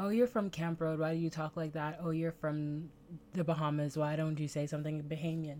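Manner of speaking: ordinary talk, nothing marked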